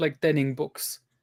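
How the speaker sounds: normal talking voice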